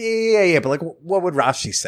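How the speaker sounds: offhand, flippant, dismissive tone. Retelling a rabbi's advice on how to say it, in a mock-flippant, dismissive tone. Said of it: "say it like flippantly, like you're almost dismissing them".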